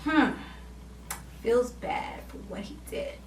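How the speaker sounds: soft, whispered, under the breath. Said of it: "she was thinking".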